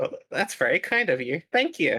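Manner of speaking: feigned obliviousness. Answering a threatened character in a game scene, acting oblivious. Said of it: "I am just totally acting oblivious".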